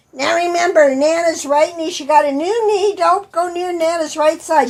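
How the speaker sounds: acted-out, high-pitched lecturing tone. Retelling how she lectured the boys on the way in, imitating someone lecturing kids. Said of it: "She's lecturing the boys".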